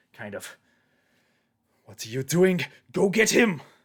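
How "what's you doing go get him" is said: very loud, high, rising shout. Voicing a character heard over the commotion of a fight: Vargas shouting over the commotion. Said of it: "you kind of hear, uh, Vargas over this commotion".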